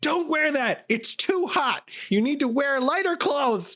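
mock, very high, full-blast shrill street scolding scream. Retelling an old lady yelling at them in the street, imitating someone screaming. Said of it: "she was like screaming at me full volume".

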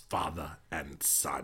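very deep, very low, very quiet, barely audible murmur. Performing a line for friends from Empire Strikes Back: Emperor voice. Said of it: "You sounded like the emperor".

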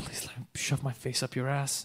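hushed whisper spoken right against the ear. Acting out a giant whispering a request into someone's ear: imitating a whisper. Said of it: "whispers in your ear".

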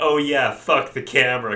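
loud, high-pitched hollering yell. Describing a photographer at a shoot, speaker acts out her line, retelling a yell. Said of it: "she's just yelling like".

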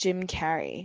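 American-style accent. Saying a name after being asked to try it: american accent. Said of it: "Now say Carrey in an American accent".

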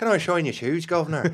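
loud, put-on, leprechaun-style Irish accent. Joking about leprechauns being cobblers who shine shoes: put-on Irish accent. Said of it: "sound right in an Irish accent".

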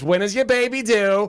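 very high put-on New York accent. Telling about touring a preschool, the speaker imitates the lady's New York voice. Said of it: "she had a very like New York voice".

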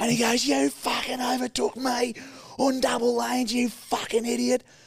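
high-pitched, abusive screaming tirade. Retelling how another driver shouted at them after a road incident, acting out the angry outburst. Imitating someone screaming. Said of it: "he's screaming at me".

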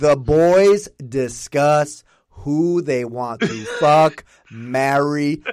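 painfully slow, careful reading, word by word. Showing how they read a text aloud for the slowest reader, reading very slowly. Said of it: "I would read it as slow as possible".

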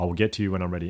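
put-on stern, abrupt, curt delivery. Retelling what a worker said while raising her hand: imitating a stern, abrupt reply. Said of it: "a very stern and very abrupt kind of".

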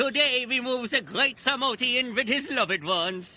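exaggerated European accent, very low. Recapping a show where they meet Siegfried and Roy, doing a Siegfried and Roy accent. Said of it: "Horrendously stereotypical European accents".

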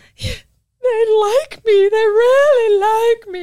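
acted, shrill, very high, loud, tearful sobbing cry. Describing how it feels after seven years, in a mock-tearful Mask acceptance speech. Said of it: "Like the mask when Jim Carrey does that acceptance".

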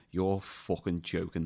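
loud, forceful delivery. Retelling a friend's remark in the cinema: imitating a friend saying it loudly. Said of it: "he said dead loud".

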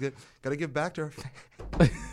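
chuckling, laughing through the words. Announcing phone calls for listeners, laughing while talking. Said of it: "Why are you laughing at fans?".

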